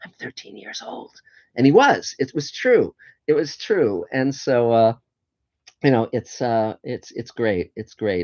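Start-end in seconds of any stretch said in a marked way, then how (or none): 0.0-1.2 hushed, very quiet, secretive whisper. Retelling how a mentor leaned forward and shared a secret: imitating whispering. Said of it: "and he whispered to me".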